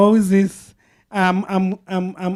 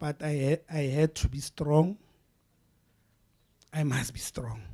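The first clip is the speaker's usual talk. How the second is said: choked up, close to tears, lower and quieter; 4 semitones lower, 11 dB quieter than usual. Speaking to the crowd, struggling to stay strong: emotional, close to tears. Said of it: "I'm so emotional".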